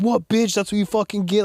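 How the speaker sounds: high-pitched, taunting, trash-talking yell. Retelling a brother yelling from the top of the cage: imitating someone yelling. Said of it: "yelling at him".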